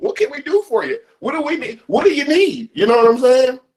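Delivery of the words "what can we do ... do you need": mock over-eager, fawning, eager to please, pitched up. Retelling what the boss says at the office: imitating fawning boss. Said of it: "tap dancing and shuffling".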